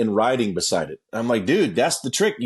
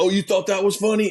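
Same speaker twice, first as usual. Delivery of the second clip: sudden high, angry snap, like a different voice; 7 semitones higher than usual. Retelling how a man who swerved at him reacted, imitating a guy snapping. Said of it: "he fucking snapped, like he was a different person".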